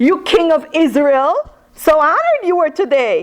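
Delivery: acted mocking sarcastic tone. Acting out Michal's words to David, playing dripping sarcasm. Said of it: "dripping with sarcasm".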